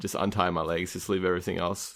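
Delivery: ordinary talk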